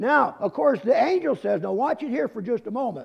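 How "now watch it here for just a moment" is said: fast, rushed, preacher-like delivery. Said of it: "am I talking too fast?".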